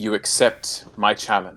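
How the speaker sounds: regal character voice. Narrating the scene, the speaker voices the Sphinx issuing her challenge: regal Sphinx voice. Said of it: "in this sort of regal voice".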